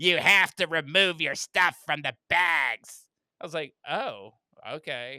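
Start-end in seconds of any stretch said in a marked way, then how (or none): 0.0-3.0 very loud, nasty shouted voice. Retelling a lady yelling from down the hall at self checkout, imitating a nasty yell. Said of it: "scream and this really like nasty voice".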